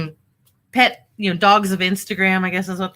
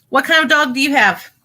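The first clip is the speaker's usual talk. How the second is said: high, raised yell, shouting it out; 7 semitones higher than usual. Asking a listener about their dog while fighting with a bottle, yelling. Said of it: "I know I'm yelling again".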